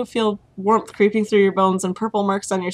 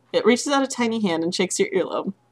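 plain

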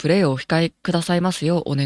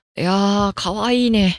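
creepy, uncle-like middle-aged man voice; 3 semitones higher than usual. Reacting to a cute game character on the selection screen: creepy middle-aged man voice. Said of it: "なんか気持ち悪いおじさんみたいな声出ちゃった".

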